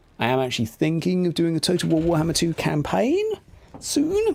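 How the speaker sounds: high, swooping upward lilt, lifting at the end. Talking to viewers about games, in a high-pitched voice with upward inflection. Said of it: "High pitched voice, upward inflection".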